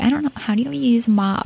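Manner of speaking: high exaggerated ditzy voice. Recalling a reality show scene, imitating Paris Hilton's exaggerated ditzy voice. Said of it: "exaggerated, ditzy voice".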